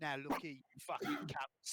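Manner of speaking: Cockney geezer accent. Showing how a catchphrase gets into an accent: Cockney geezer accent. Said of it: "There's a fucking Cockney geezer".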